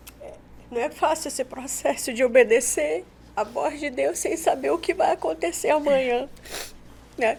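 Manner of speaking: tearful crying speech. Responding to what the other speaker just said, crying while talking. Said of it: "tô chorando aqui".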